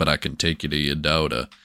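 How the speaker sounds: generic movie-style cowboy voice. Retelling a movie scene, voicing a character's line: sounding like Clint Eastwood. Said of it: "Why did you make him sound like Clint Eastwood?".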